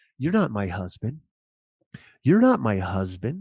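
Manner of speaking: put-on elderly woman's voice. Retelling how an old lady in a nightgown spoke in the street: imitating an old lady. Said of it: "this lady's looking at me in her nightgown, and she's going".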